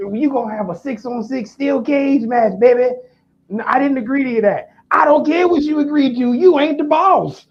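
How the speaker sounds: put-on wrestling promoter voice. Retelling what the boss said about a cage match: Briscoe impression. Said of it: "that's a good ass Briscoe impression you got".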